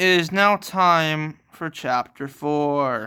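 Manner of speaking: slow woman TV announcer voice, "four" drawn out. Reader announcing the next chapter, in a Family Guy announcer woman voice. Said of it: "Sounded like the announcer woman off of Family Guy".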